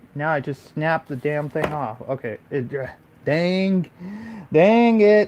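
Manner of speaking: loud, exasperated, frustrated outburst under strain. Struggling with a camera that keeps moving: frustrated. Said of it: "it's a little slightly frustrating".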